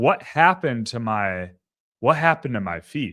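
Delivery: ordinary talk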